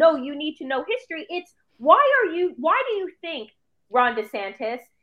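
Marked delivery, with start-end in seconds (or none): none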